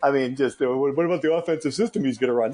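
put-on dopey, dim-witted voice. Podcaster parodying people's reasons not to hire him, in a put-on dumb voice. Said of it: "I'm using the dumb voice a lot".

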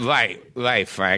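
put-on punch-drunk fighter voice. Acting out a comedy routine as the fighter: punch-drunk fighter voice. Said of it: "I'm talking like this".

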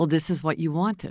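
very gentle, soft tone. Speaker quoting what her husband says when she complains, retelling a very gentle remark. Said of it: "very gently".

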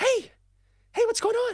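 breathless, very high, an octave up. Retelling a partner's phone call at work, imitating breathless high-pitched voice. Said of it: "she's out of breath, voice up an octave".

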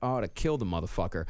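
imitated low muttering. Retelling what a man muttered after slamming down the phone, imitating a mutter. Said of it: "he just kind of mutters like".

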